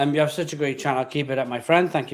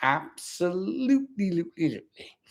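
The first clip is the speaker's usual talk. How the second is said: put-on TV cartoon character voice; 3 semitones higher, 6 dB quieter than usual. Agreeing with a comment that was just read out, in a Homer Simpson voice. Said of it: "in a Homer Simpson voice".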